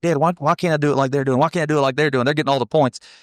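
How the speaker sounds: put-on upset, whiny, childish pleading tone. Retelling complaining to his dad after junior rodeos, imitating his upset younger self. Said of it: "going home from the junior rodeos just upset".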